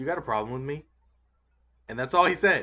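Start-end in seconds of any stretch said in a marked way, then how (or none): 0.0-0.9 confrontational, daring, challenging tone. Retelling a wrestler confronting another face to face: imitating Brock Lesnar confronting Kurt Angle. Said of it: "looks Kurt right in his face and goes".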